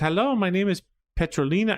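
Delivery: halting, non-fluent English. Voicing the lady who runs Hotel España, speaking broken English. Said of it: "it's broken English".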